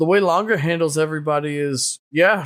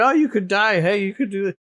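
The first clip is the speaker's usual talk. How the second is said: called out, a touch higher in pitch; 5 semitones higher than usual. Retelling how Reki yelled at another character: imitating Reki yelling. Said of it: "you got Reki yelling at him".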